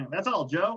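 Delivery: high, lighthearted cartoon voice, read light. Told to read a game announcement in a lighthearted Looney Tunes voice. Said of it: "read this in a lighthearted Looney Tunes voice".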